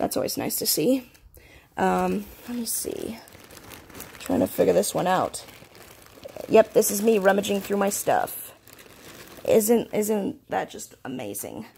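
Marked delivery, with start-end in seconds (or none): 9.5-11.7 slow, dry sarcasm with fake gushing, swooping pitch. Showing viewers the rummaging through belongings, sarcastic. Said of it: "I'm being sarcastic".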